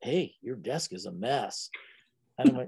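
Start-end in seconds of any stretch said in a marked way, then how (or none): 0.0-1.7 quiet, leaning-in half-whisper. Retelling how a new teacher leaned over in class: imitating a half-whisper. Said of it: "he leans over to me and he whispers".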